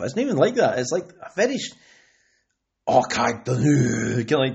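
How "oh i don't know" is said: put-on very slow, drawn-out Scottish accent. Imitating the cartoon character Willie's stereotypical Scottish accent: Willie's Scottish accent. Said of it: "the Scottish accent".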